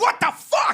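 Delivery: acted angry outburst, pitched way up. Recounting a scary late-night incident with a van: retelling an angry outburst. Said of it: "of course I'm like super scared but now angry".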